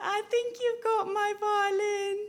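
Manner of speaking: high little voice. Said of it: "there's a little voice saying".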